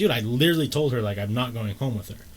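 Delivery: ordinary talk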